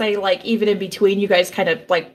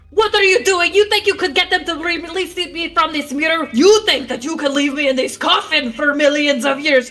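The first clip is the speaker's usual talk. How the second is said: high, furious, angry screaming; 8 semitones higher than usual. Acting out a scene where characters scream at each other, screaming in anger. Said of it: "Sorry for screaming".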